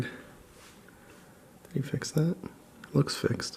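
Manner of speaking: soft unvoiced whisper, close to the microphone.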